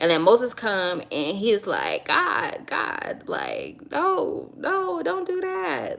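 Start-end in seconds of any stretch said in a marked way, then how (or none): 2.1-6.0 mock, very high, slow, drawn-out pleading. Retelling how Moses answers God's threat: imitating Moses pleading. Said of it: "so he pleads with God on behalf of them".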